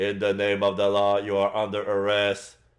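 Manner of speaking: stiff, mechanical robot voice. Doing a voice to fit his stiff, mechanical moves: RoboCop voice. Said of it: "I'm doing a voice that fits him".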